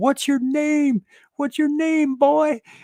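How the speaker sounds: shrill, high, loud screaming. Retelling how a man in a store went after a boy, imitating someone screaming. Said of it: "he starts screaming".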